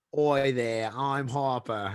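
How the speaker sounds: put-on Australian accent character voice. Asked by the others to do it, he performs his Harper Australian voice. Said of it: "Harper J F K Australian voice right now".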